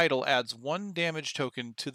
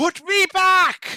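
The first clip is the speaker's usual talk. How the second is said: shrieking, very high and loud voice; 12 dB louder than usual. A voice from inside the player's head commands them, screeching voice. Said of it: "A screeching voice that seems to come from inside your head commands you".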